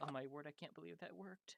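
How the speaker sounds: relieved, hushed character voice.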